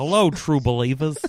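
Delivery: put-on voice starting strong, then quickly fading and falling apart. Asked for voices, the speaker offers a best attempt at an impression: best-attempt impression. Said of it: "It's my best attempt".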